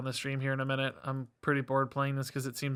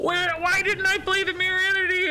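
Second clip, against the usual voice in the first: annoyed tone, higher pitch and louder; 9 dB louder than usual. Realizing a missed play during a card game, mad at himself. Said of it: "I'm so mad at myself".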